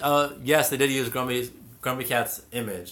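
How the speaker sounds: normal talking voice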